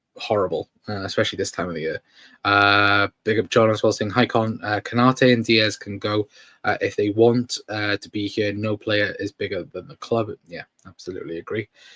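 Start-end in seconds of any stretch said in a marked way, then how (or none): none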